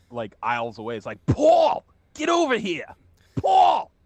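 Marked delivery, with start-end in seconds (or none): 1.2-3.8 very loud, shrill, yelling put-on New York accent. Retelling how he called to someone aisles away, yelling in a foreign accent. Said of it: "I just yell in a foreign act, like in a foreign accent".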